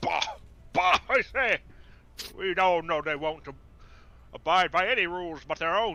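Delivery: loud huffing gentleman's bluster. In an actual-play game, voicing a character at a discussion; blustering stout-fellow voice. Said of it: "Very stout fellow, big bristly mustachios. / Very stout fellow, big bristly mustachios. Just takes out a pipe, lights it. My word! That was positively atrocious! The woman will turn to you and go, yea".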